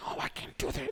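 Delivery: hushed whisper, very quiet. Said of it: "but they're whispering".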